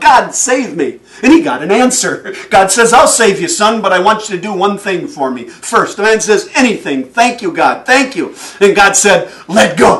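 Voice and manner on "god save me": mock desperate pleading holler. Telling of a man hanging from a branch on a cliff, calling out to God: retelling a holler. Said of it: "He hollers out".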